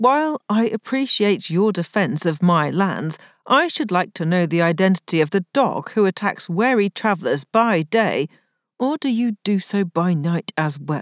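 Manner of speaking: ordinary delivery, nothing marked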